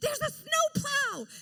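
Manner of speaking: high, slow screaming. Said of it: "one of the ladies in the back is screaming".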